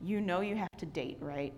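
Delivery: mock-deadpan flat delivery. Retelling a woman's reply to the speaker, retelling a deadpan remark. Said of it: "She looked at me deadpan and says".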